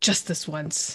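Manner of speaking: muttered under the breath. Voicing a character who uses their ultimate, under his breath. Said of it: "under his breath again".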